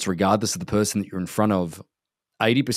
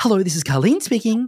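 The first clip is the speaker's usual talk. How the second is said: very high, polished, best-ever phone voice; 13 semitones higher, 4 dB louder than usual. Describing a friend's mum answering the phone, Carlene's phone voice impression. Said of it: "the greatest phone voice in the world".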